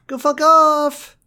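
very high, loud yell, holding the off long. Retelling a scene where Josh tells them to go fuck off: Josh voice. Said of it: "do Josh voice".

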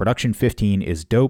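ordinary talk

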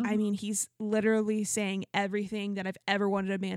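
normal talking voice

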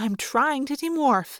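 plain

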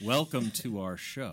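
slow deliberate radio voice. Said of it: "talk very slowly and deliberately like this".

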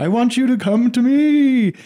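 eerie, very high, drawn-out ghost voice. A priest retelling how someone in the communion line spoke, retelling a ghostly voice. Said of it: "this guy goes into this ghost mode".

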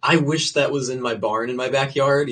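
ordinary delivery

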